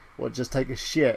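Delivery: ordinary talk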